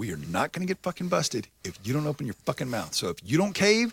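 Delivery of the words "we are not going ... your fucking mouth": put-on dead serious tone, faster. Retelling what a man said when he got super serious, as a mock-serious warning. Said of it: "He gets like super serious about this shit".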